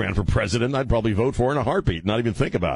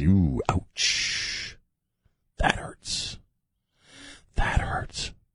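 creepy put-on old politician voice, lower and quieter; 5 semitones lower, 5 dB quieter than usual. Joking about low approval ratings: creepy Joe Biden voice. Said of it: "Using my creepy Joe Biden voice".

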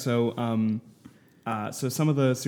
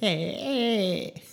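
very high-pitched, dumb-sounding put-on voice; 10 semitones higher than usual. Retelling Little Nicky's reply after a woman tells him off: Adam Sandler's dumb Little Nicky voice. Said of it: "peak, just dumb voice".

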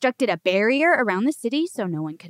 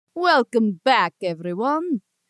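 put-on vampire voice; 2 semitones lower than usual. Opening a show segment after an ad break: Count Chocula voice. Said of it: "Do I sound like Count Chocula?".

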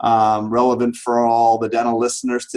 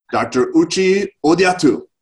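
fake, pitched-up Japanese accent on the name; 6 semitones higher than usual. Introducing a guest by full name: in a Japanese accent. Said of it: "I'm going to say it in a Japanese accent".

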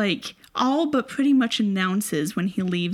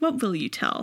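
plain

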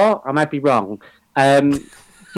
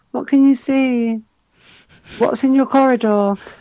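high-pitched woman's voice; 9 semitones higher than usual. Showing how the lady talks when she regresses a celebrity, an impression of the regression lady. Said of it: "that's how the lady talks".

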